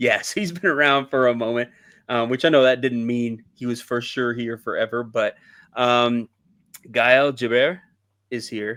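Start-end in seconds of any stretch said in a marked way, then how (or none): 6.9-8.8 word said in put-on French accent. Speaker says a Frenchman is here, naming him: put-on French accent. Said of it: "Was that a pretty good French accent?".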